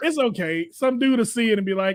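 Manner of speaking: ordinary talk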